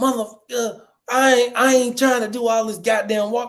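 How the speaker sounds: high-pitched, angry cursing voice. Retelling a long walk on a trip: imitating mom cussing out. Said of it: "My mom cussed me the f-, out".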